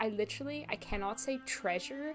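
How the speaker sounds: plain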